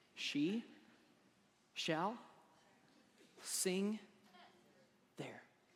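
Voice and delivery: very slow, very quiet, careful word-by-word reading. The speaker tackles a tongue twister they admit they can't say: said real slow. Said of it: "I'm going to say it real slow".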